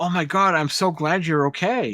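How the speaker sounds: put-on, insincere, feigned concern and worried relief. Retelling a film scene where a character fakes relief: imitating feigned concern. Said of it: "he's feigning concern".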